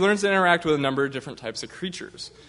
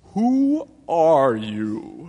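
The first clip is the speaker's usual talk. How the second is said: drowsy, half-asleep, heavy-lidded voice. Narrator reading the Caterpillar's first words to Alice, sleepy Caterpillar voice. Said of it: "addressed her in a sleepy voice".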